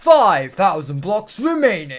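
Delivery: grand, booming, dramatic announcer voice. The speaker breaks into an epic announcer voice for a moment. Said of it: "Epic announcer voice".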